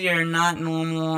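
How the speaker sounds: ordinary talk, nothing marked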